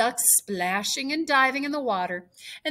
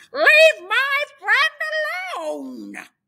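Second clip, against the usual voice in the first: very high, very loud, angry duck-like squawk; 8 dB louder than usual. Narrator reads a duck in a pond speaking to a cat; angry quacking duck. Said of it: "quacked angrily at the cat".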